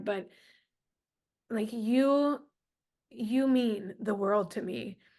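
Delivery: voice holding back tears. Telling the other speaker what she means to you, holding back tears. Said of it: "I'm trying not to cry".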